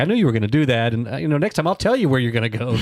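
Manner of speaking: ordinary talk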